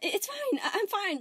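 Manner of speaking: very high, slow, drawn-out nervous laughing words. Narrating a story, reading Spinel's line to Steven, with a nervous chuckle. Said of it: "She chuckled nervously and said".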